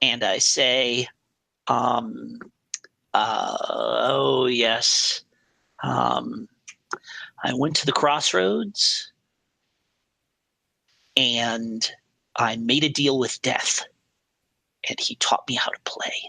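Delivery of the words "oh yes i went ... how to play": conspiratorial, secretive, confiding tone. Answering a character's question in a role-play, leaning in: telling a secret. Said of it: "lean in like it's a secret just between the two of us".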